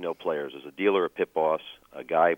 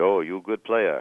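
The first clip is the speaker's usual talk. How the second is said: imitation Ukrainian accent. Retelling what a pit manager said to the speaker at the cage, in an attempted ukrainian accent. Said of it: "Sorry about the attempt at Ukrainian accent".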